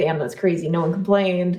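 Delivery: plain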